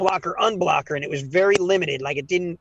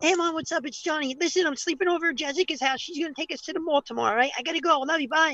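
put-on very high, rushed little kid's voice; 11 semitones higher, 5 dB quieter than usual. Calling random phone numbers at sixteen, in a little kid's voice. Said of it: "I was able to do like a little kid's voice".

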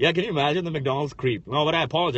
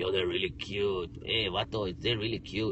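very low, deep, quiet, slangy casual voice; 7 semitones lower, 7 dB quieter than usual. Retelling what Ricky would say, imitating Ricky's voice. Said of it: "Not that he really speaks like that".

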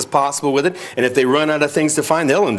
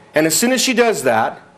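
usual speaking voice

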